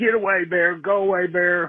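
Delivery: put-on high-pitched shout.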